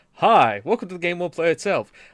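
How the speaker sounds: loud put-on show-host announcer voice. Opening a show with the announcements, put-on announcer voice. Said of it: "I guess I should go into announcer voice".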